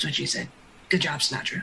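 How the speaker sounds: low, under-the-breath muttered aside. After the creature's last yell, a character mutters: muttered under her breath. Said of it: "under her breath".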